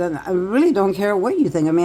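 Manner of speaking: ordinary talk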